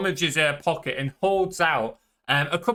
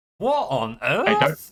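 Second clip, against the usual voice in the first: bewildered pirate voice, caught off guard. Voicing a pirate who sees a monkey running toward her: baffled pirate. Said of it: "as she looks at you really baffled".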